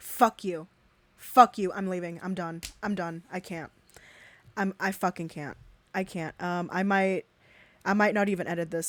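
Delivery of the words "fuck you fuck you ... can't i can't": furious, enraged voice. Recording, about to stop and maybe not even edit this: furious. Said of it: "this is fucking infuriating".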